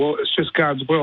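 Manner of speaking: normal talking voice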